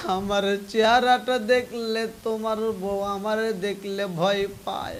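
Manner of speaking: tearful, sobbing, pleading voice. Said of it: "কান্দার কয়".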